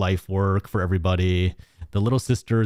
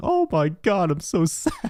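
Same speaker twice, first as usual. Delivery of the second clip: put-on sorrowful moan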